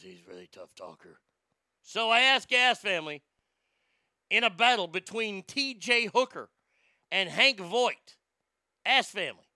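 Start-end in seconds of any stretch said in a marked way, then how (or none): 0.0-1.2 very quiet, soft tough-guy murmur. Introducing a TV cop in a matchup vote: Hank Voight voice. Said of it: "He talks like this".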